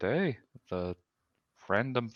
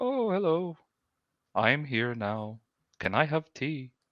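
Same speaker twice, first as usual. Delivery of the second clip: mock breezy, nonchalant, slow and calm tone; 4 semitones higher than usual. Retelling how a man rowing up in a storm spoke: imitating a calm man. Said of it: "he's all calm, and he's just like".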